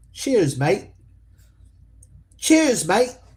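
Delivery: terrible put-on British accent, sing-song. Saying a goodbye phrase for fun: terrible british accent. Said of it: "terrible, uh, terrible accent there I have".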